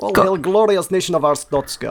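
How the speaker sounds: silly put-on Eastern European accent. Asked by the others to do the voice, exaggerated Eastern European accent. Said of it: "Would you like to demonstrate the voice".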